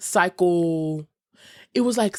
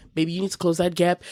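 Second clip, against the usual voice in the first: plain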